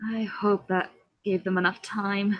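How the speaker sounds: grumbling, muttered to oneself. Stalking back to the table in character, muttering to oneself. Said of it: "kind of mutter to myself".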